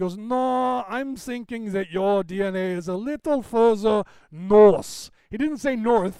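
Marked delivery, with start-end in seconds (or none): 0.2-5.1 slow put-on German accent. Retelling a doctor's reply during a checkup, imitating a German accent. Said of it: "he looks at me with that accent".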